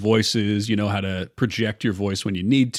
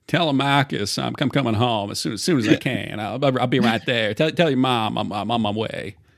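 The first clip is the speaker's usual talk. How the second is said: put-on Texas accent, Texan way of talking. Redoing a scene with Athena, voicing a character addressing Telemachus, Texas accent. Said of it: "it's got to be like more Texas sound".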